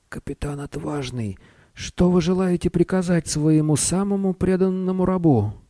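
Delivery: faint, very high, almost inaudible voice. The wizard answers his captain, in a barely audible voice. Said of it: "Еле слышным голосом волшебник произнес".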